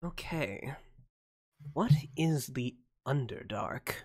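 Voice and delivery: puzzled, whispered mutter under the breath, half to oneself. A role-play narrator voices a character alone with her books, muttering to herself. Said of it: "she sort of mutters to herself".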